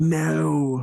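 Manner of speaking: whispering in a character voice. Voicing a character who leans over to answer: whispering in character. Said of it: "He's gonna lean over and whisper".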